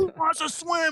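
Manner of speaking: very high, acted-out shout. Retelling addressing a crowd of kids from a Humvee: imitating his own past yelling. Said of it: "yelling my s-".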